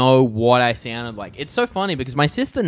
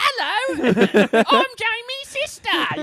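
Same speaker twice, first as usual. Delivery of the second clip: put-on Cockney accent, very high-pitched, very slow. Imitating a sister who sounds very English: imitating sister's Cockney accent. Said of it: "the most English fucking, like, Cockney".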